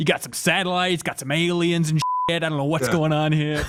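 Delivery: mock New York Italian man voice. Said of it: "reading the screen, be like".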